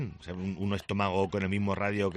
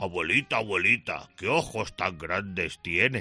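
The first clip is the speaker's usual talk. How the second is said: put-on big bad wolf voice. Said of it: "que he puesto voz de lobo a Caperucita".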